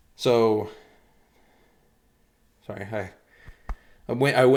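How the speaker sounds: a little out of breath. Stumbling over words after reading too fast: winded, a little out of breath. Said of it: "I winded myself just a little bit there".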